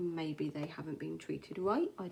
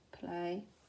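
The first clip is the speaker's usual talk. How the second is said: play said very quietly, hushed, under the breath; 3 dB quieter than usual. The dog can spell and is in the room: quiet on "play". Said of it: "I'm saying this really quietly because he's in the room".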